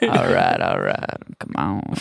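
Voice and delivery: very low, gravelly, rough rumbling voice. Doing a Matthew McConaughey impression of his famous catchphrase. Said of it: "Matthew McConaughey's famous catchphrase".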